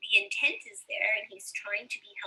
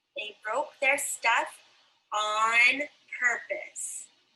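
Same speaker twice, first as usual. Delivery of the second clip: emphatic, every word stressed harder; 5 dB louder than usual. Reading a sentence aloud so listeners hear the difference, with extra emphasis. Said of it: "I'm reading them with a little bit more what's called emphasis".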